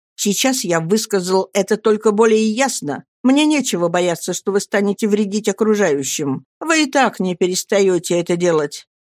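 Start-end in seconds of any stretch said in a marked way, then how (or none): none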